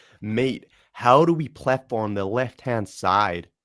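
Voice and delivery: attempted Canadian accent. Practising accents with another speaker, the speaker tries a Canadian accent. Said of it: "in a Canadian accent?".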